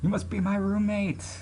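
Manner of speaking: badly done bouncy voice. Reading a story aloud, voicing the new roommate's greeting in a terrible character voice. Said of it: "I did that voice terribly".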